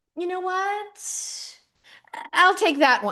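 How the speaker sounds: high, drawn-out, dragged-out voice. Acting out Martha casually picking a jackfruit at the store: imitating Martha. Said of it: "just gonna go to the store and just be like".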